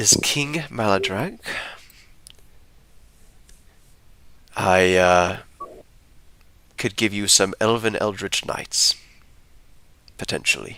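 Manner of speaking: speaking in a quiet voice. Voicing a character who introduces himself at a table: quiet voice. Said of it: "this guy quietly says".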